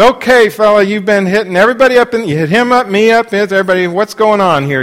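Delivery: very loud call-out. Retelling walking over to confront a man in a small room, retelling a loud callout. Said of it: "I said in a loud voice".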